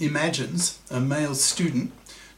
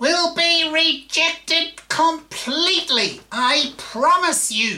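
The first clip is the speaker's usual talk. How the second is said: very high, loud female voice; 13 semitones higher, 5 dB louder than usual. Quoting the partner's emailed reply to the proposal, in a female voice. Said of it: "in female voice".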